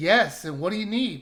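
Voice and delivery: ordinary talk, nothing marked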